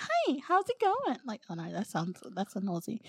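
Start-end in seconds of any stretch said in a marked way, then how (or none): 0.0-1.2 very high-pitched, forced-cheery, put-on American accent. Describing american accents they dislike, doing a fake-happy american accent. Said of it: "like they sound fake happy".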